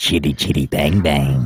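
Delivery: deep movie-trailer voice. Reading something aloud to kill time before a show, in a super deep movie-trailer voice. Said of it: "like that super deep trailer guy from the movies".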